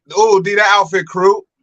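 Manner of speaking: put-on west side Chicago accent. Imitating family from out west who add R's to words: imitating west side Chicago accent. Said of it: "and they talk like".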